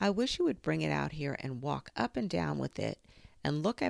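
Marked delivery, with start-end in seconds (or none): none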